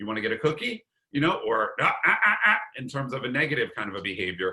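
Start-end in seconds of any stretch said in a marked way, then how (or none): 0.0-0.8 pitch climbing upward on "cookie". Showing how you can go up on the inflection, rising inflection on cookie. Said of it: "You can go up on the inflection".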